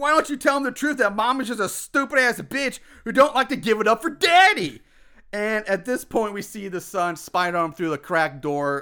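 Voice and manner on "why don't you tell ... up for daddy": loud, higher-pitched shouting, getting even louder. Retelling a scene where the husband gets even louder: imitating a man yelling louder. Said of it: "Jason gets even louder now".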